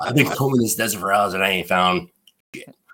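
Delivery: put-on thick Boston accent. Retelling a story, the speaker quotes Russo after he came back: imitating Russo's Boston accent. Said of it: "the guy with the super thick Boston accent".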